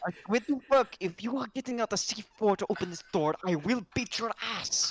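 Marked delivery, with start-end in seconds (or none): 1.0-4.9 higher-pitched whispered shout. Retelling what they told the guys at the door, in a whispered shout. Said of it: "in like the whispered shout tone".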